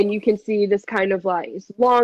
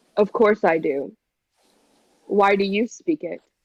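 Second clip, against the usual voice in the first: graceful, polished, refined courtly elf voice. Voicing an elf who hesitates, then answers: elegant elf voice. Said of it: "very elegantly".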